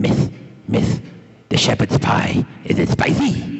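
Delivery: rough-edged comic shtick voice. Retelling an actor in character ordering food from the counter lady: Miracle Max voice. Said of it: "Eh? Like that".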